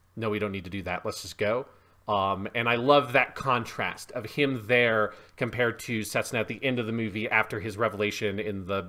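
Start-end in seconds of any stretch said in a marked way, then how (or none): 0.2-1.7 put-on cold delivery, lower, quieter, faster. Describing a movie scene, quoting a character's refusal, imitating someone saying it coldly. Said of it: "very coldly saying".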